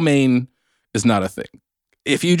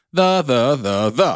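each the said on a different tone. Showing how one English word could carry different tones: one word in different tones. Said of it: "depending on which tone you said it".

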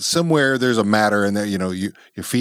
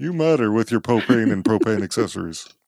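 put-on animated sitcom dad character voice. After talking about which impressions you do, say it as a Hank Hill impression. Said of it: "I'll do it as Hank Hill".

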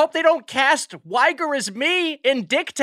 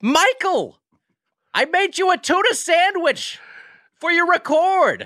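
acted, mild, slow, drawn-out calling-out voice; 3 semitones higher than usual. Co-host imitates the other host's mom calling to her son: imitating a mom yelling from another room. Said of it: "just yelling at you from the other room".

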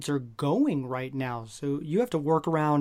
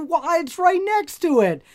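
high, loud, incredulous, exasperated outburst. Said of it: "And I'm like".

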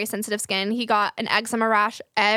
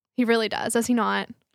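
usual speaking voice

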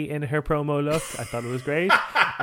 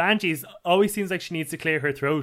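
plain

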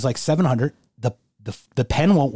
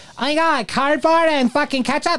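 very high, clumsy, badly done little-kid voice; 14 semitones higher than usual. Joking about how much kids love it, put-on child voice. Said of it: "That was the worst impression of a child I've ever had".

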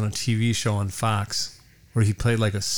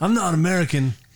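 badly done put-on Australian accent, pitched up; 7 semitones higher than usual. Viewer mocking an American actor's attempt at sounding Australian, bad fake Australian accent. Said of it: "He sounds like us when we try to do accent".

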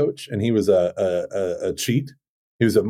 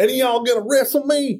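put-on silly country accent, much higher. Retelling what Michael Gormley asked the group, in his silly country accent. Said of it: "the silliest country accent".

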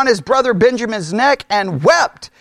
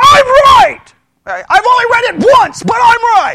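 very high, loud, self-certain know-it-all tone; 11 semitones higher, 6 dB louder than usual. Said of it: "wherever ten Christians are, we would get seventy-five different answers".

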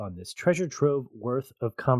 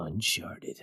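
whispered, breathy, dramatic movie-trailer announcer voice; 5 semitones lower, 6 dB quieter than usual. Introducing the movie's title the way it should be said: dramatic movie-trailer announcer delivery. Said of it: "that's how it's supposed to be said".

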